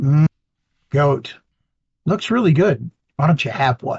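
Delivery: secretive half-whisper, close to the ear. Half-whispering to a griffin mount, urging it to grab a goat: half-whispering. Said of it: "I'll just whisper to my, uh, my mount and say".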